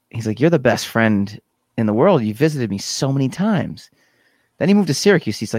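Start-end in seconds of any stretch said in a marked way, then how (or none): none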